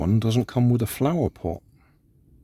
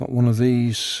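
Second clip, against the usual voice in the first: ordinary talk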